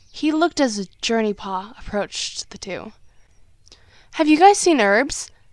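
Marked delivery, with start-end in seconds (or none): 4.1-5.2 very loud, high, grating, cheerful tone. Reading a story aloud, a character asks two others where someone is, annoyingly cheerful. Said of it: "in her usually and annoyingly cheerful tone".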